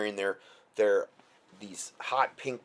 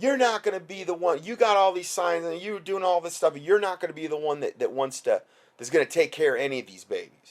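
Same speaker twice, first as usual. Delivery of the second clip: mock screaming, much higher pitch; 8 semitones higher, 5 dB louder than usual. Retelling a woman who pulled up screaming at them, imitating her screaming. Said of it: "she's screaming at us".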